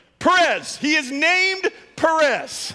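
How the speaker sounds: high, loud, slow joyful cheering crowd shout.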